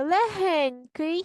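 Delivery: легенький very slow, loud and drawn out. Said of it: "Читаємо за мною".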